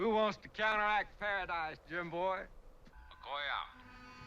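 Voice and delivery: put-on heavy, thick Southern accent, very high. Offering a real cold Georgia-style mint julep: thick Southern accent. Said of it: "he has a thick Southern accent".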